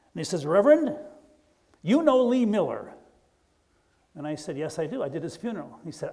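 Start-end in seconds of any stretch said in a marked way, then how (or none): 0.4-2.9 very serious heavy Irish brogue, high and loud. Retelling a stranger's question at the speaker's truck, in a heavy irish brogue. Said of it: "this guy with a very serious Irish brogue".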